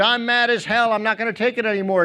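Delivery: acted, mild, fed-up half-shouted yell. Retelling a movie scene of a man screaming out his window: imitating a scream. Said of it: "opens up his window and screams".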